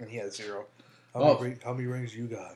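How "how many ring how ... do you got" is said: loud, needling, gloating, taunting tone. Retelling what Shaq says back to Charles: Shaq voice. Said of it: "and then Shaq goes".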